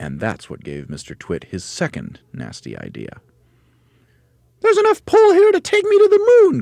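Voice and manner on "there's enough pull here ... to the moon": shrill, very high-pitched, very loud crying out. Mrs. Twit, her feet tied to the ground, speaks to Mr. Twit, crying out. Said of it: "Twit cried out".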